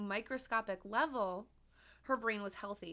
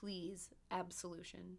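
put-on very weak, begging voice, much quieter; 3 semitones lower, 10 dB quieter than usual. Retelling how she begs after all the shrieking, imitating speaking very weakly. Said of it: "all she can do is very weakly say".

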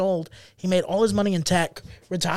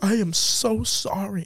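put-on very slow, blubbering, drunken weeping. Telling a story, the speaker quotes what a man said while crying, imitating drunk crying. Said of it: "He's like drunk crying".

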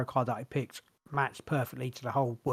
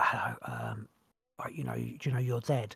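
slow, careful, hushed half-whisper; 3 dB quieter than usual. Retelling what she said to a woman in dead world: half-whispering. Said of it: "And I was like whispering".

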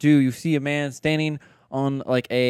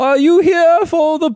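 shrill, high-pitched yell at full volume; 8 dB louder than usual. Playing the bounty poster as a player's character walks over, yelling. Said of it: "I'm so used to yelling".

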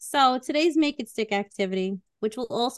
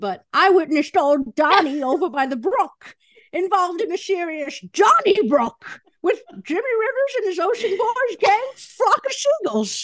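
put-on old lady voice, much higher, louder; 8 semitones higher, 6 dB louder than usual. Sharing a ridiculous made-up example, told in an old lady voice. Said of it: "I don't know why I had to be the old lady voice".

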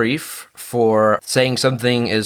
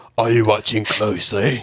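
put-on Cockney accent.

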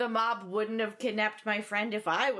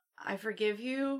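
ordinary talk

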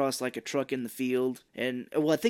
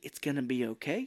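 put-on sweet-talking voice, quieter; 5 dB quieter than usual. Retelling a movie scene where Mark Wahlberg talks to a plant: imitating Mark Wahlberg talking real nice. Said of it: "He starts talking real nice".

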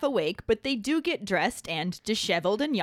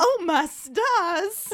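put-on southern belle voice, pitched much higher; 10 semitones higher, 5 dB louder than usual. Criticizing a film scene, the speaker voices Ron as a mock-scandalized Southern belle. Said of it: "like he's a fucking scandalized Southern belle".

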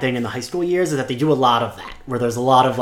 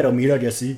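slight put-on Spanish accent, just a touch. Performing a made-up line in Spanish: Spike accent. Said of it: "a little bit of a Spike accent".

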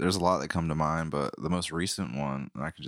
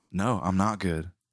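put-on, attitude-filled, answering-back delivery; 2 semitones higher, 3 dB louder than usual. Retelling a begging man's reply: imitating someone with attitude. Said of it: "kinda like an attitude".

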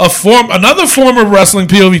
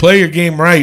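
ordinary talk, nothing marked

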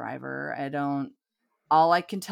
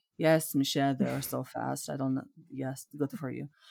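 put-on horror-film vampire voice; 3 semitones lower, 4 dB quieter than usual. Retelling how a woman answered the speaker's stepfather, in a vampire voice. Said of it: "like a vampire".

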